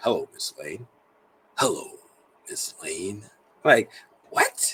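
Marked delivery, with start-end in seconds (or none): 0.0-3.2 smooth, silky, velvety voice. Imitating Clark Kent greeting Miss Lane: velvety Clark Kent voice. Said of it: "that velvet in your voice".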